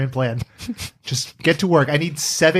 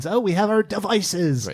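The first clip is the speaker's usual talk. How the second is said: put-on high, nerdy troll voice; 5 semitones higher than usual. Discussing a film, the speaker quotes Batman in his high nerdy troll voice. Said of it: "in his high nerdy troll voice".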